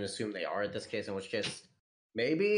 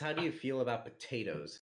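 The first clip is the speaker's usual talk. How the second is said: ordinary delivery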